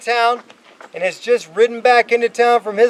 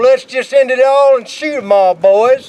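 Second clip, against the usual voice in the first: heavy put-on Old West gunslinger accent; 4 dB louder than usual. Speaker quoting a famous line from a tense meeting, Jesse Evans Old West accent. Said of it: "Did I do good with that accent?".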